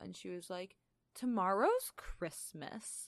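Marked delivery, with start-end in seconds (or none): 1.1-3.1 play-acted high, curt, dismissive receptionist voice. Retelling a clinic receptionist's curt reply: imitating a receptionist's dismissive tone. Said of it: "And that exact voice".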